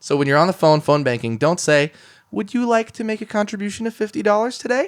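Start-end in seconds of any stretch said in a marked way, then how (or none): 2.3-4.9 upward rising inflection at the end on today. Showing how not to ask for a donation by phone, rising at the end. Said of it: "Don't have that upward inflection".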